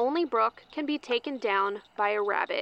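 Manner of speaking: ordinary delivery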